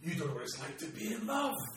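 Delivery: very high, shrill, rising shrieking scream. Game master voicing a shot woman screaming at a player character, screaming. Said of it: "She looks at you and screams".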